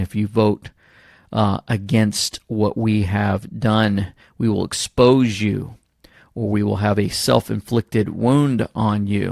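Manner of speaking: deep, slow, menacing late-night movie voice. Acting out an imagined late-night phone call threat, like in movies: imitating a deep voice. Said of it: "with that deep voice saying".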